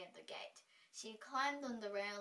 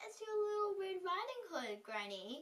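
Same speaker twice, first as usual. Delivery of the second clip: put-on very high, dainty, affected, mincing little-girl voice; 10 semitones higher, 3 dB louder than usual. Narrating the fairy tale, the wolf answers Granny through the door in a mincing voice. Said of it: "said the wolf in a mincing voice".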